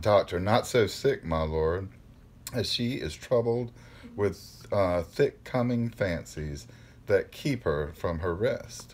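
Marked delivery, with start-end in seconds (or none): none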